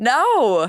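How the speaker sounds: high-pitched, loud, incredulous outburst. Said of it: "you're like".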